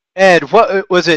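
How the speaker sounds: normal talking voice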